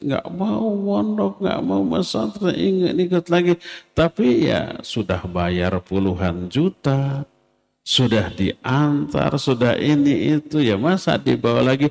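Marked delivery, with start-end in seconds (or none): 0.0-3.6 put-on high, shrieking child's screaming voice. Describing children left at boarding school by their parents: imitating a screaming child.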